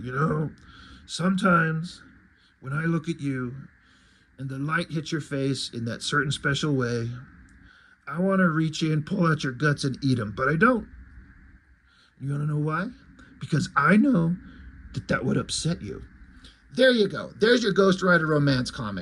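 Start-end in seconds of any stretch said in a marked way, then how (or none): 0.0-16.0 deep character voice. Recasting a comedy skit line as Ghost Rider speaking: deep Ghost Rider voice. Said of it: "He's got to have a deep voice".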